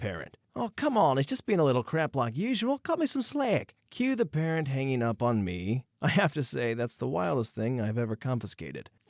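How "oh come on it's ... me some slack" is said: very high, off-the-cuff put-on Australian accent. Voicing the parent on a phone call from school: Australian accent. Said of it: "that Australian accent was great on the fly".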